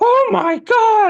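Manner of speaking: put-on panicked woman voice. Retelling a woman on the subway's first reaction: imitating a panicking woman. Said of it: "starts, like, panicking".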